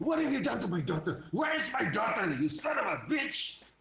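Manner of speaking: furious, enraged outburst, pitched high. Speaker shows how to display feelings, demonstrating anger. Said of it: "If you're angry".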